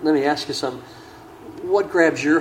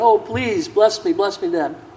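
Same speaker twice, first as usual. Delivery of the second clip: slow, put-on, bitter, begging cry; 4 semitones higher, 4 dB louder than usual. Retelling a son pleading with his father, retelling someone crying out. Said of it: "So he's crying out".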